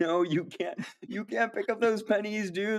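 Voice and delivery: very high-pitched, overexcited, gasping alarm. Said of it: "soy jacking at it".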